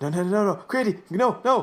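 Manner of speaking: high, panicked, pleading no, repeated over and over.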